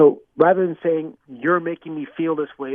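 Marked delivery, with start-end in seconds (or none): none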